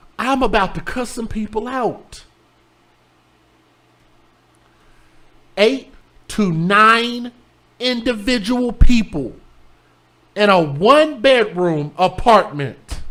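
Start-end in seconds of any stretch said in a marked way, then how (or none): 5.6-13.0 worked-up, heated rant with "nine" stretched. Speaker venting to listeners, about to cuss some people out, screaming. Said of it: "Sorry for screaming in y'all ear".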